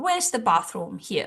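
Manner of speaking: ordinary delivery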